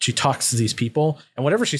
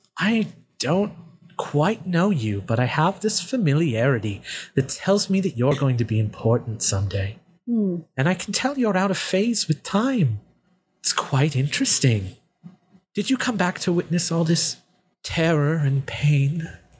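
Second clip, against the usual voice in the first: cool, dark, menacing woman's voice; 4 semitones higher than usual. Voicing a woman character who speaks to panicking dwarves, in a woman character voice.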